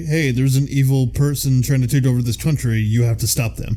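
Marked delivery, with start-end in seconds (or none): none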